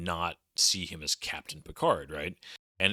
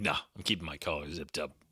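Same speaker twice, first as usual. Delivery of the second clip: utterly stoic, completely unmoved delivery; 3 semitones lower, 4 dB quieter than usual. Describing a crew member's zipped collar, stoic Worf voice. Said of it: "very stoically".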